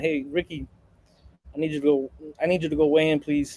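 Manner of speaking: courteous, deferential, very respectful and polite tone. Retelling asking a player to weigh in: retelling a very respectful request. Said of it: "very respectful".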